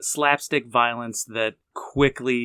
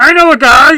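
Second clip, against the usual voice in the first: very high, very loud cartoon drunk barfly voice; 19 dB louder than usual. Offering to read the description: like the fat drunk guy from The Simpsons. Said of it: "That's who you sounded like".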